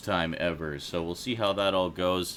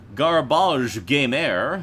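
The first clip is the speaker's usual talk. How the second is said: put-on French accent, pitched much higher; 7 semitones higher, 9 dB louder than usual. Host introducing the show's regulars by name: French accent. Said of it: "Why does garbage get the French accent".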